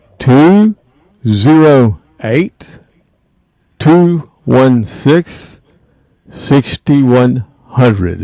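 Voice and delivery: said slowly, at a slow pace. Host giving listeners the call-in number, saying it slow. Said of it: "I'm going to say it slow".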